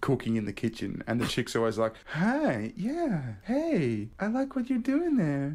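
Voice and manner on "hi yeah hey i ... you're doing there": very high, swooping, drawn-out, acted seductive voice. Describing a scripted porn scene, the speaker imitates the woman in a mock seductive voice. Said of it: "just fuck me sort of voice".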